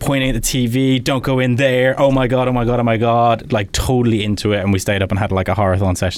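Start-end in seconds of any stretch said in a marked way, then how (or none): 1.0-3.5 put-on screaming, carried away. Retelling how she reacted while watching the TV, imitating her screaming. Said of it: "she was screaming".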